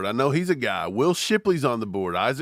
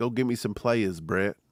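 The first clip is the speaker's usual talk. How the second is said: put-on low-pitched, strong northeastern American accent; 4 semitones lower, 4 dB quieter than usual. Imagining Spags talking to Brett: Spags impression, northeastern accent. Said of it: "you know, northeastern accent".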